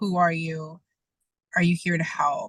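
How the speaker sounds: ordinary delivery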